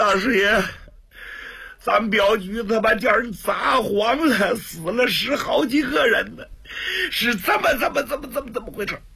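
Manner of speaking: high, broken, sobbing outburst while crying.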